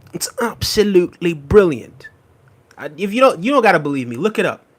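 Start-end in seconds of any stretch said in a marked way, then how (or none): 0.1-2.1 the word absolutely said in a British accent. Showing viewers how the British say absolutely, in a British accent. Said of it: "hear me say absolutely with a British accent".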